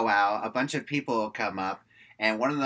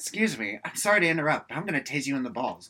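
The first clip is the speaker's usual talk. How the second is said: put-on calm, polite voice. Retelling a movie line where someone politely threatens to tase a guy: imitating Samantha's calm, polite threat. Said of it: "In a very calm manner".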